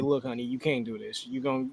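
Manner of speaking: soft, low, calm and gentle tone. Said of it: "calm myself down and say".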